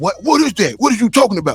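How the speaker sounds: mock irritated, acted annoyed tone. Acting out being too old to understand kids' talk: mock irritated. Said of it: "you getting too old when you start getting irritated".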